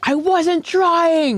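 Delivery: mock indignant, high, defensive yelling. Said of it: "And he's like yelling".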